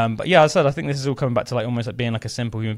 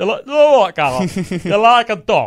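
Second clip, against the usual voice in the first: northern English granddad voice, raised and slow; 8 semitones higher, 6 dB louder than usual. Retelling what his granddad always says to him, imitating granddad's northern accent. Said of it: "in his northern accent".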